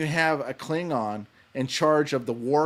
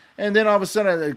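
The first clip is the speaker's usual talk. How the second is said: plain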